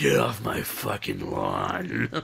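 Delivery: put-on slow, drawn-out, raspy old man grumble with swoops. Voicing the old man Godzilla from a drawing: old man Godzilla voice. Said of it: "telling people to get off his lawn".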